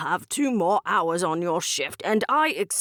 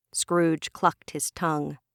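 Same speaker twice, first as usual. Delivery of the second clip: ordinary delivery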